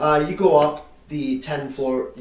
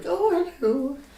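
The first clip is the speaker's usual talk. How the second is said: put-on very high-pitched little old lady character voice. Voicing a little old lady greeting visitors: little old lady voice. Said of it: "She's like".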